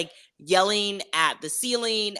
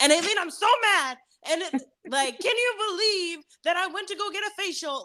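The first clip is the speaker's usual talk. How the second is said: very high, shrill, exaggerated, over-the-top yelling; 11 semitones higher than usual. Explaining she sounds like she's yelling while podcasting, demonstrating the yelling. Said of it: "I feel like I'm yelling at you".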